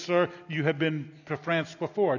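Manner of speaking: ordinary delivery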